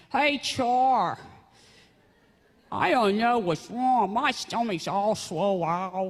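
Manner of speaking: put-on slow Pennsylvania accent, drawn-out "Char". Retelling a sick cousin's phone call: imitating a Pennsylvania accent. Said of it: "he used to talk like this, you know, that Pennsylvania accent".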